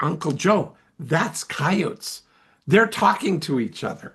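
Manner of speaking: acted-out proud, announcing tone. Retelling telling an uncle what the howling sound is: imitating a proud announcement. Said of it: "I proudly announced to my uncle".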